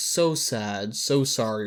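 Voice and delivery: play-acted, very slow drawl dripping with sarcasm. Retelling a reality-show goodbye message to a fellow houseguest: imitating a sarcastic tone. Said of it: "like, sarcastic".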